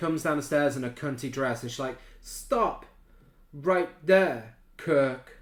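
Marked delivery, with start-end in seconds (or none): 2.2-5.2 loud, very slow, drawn-out, deliberate delivery. Retelling an actress's line in a film scene: imitating Renee Harmon's line delivery. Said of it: "a pretty good impression of it".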